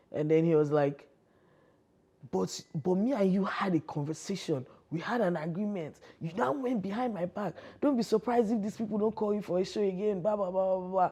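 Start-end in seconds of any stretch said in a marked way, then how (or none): 2.3-11.1 mock scolding, parental telling-off tone. Retelling a phone call where a man scolded: imitating someone yelling. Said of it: "This guy was yelling at me as if I was his child".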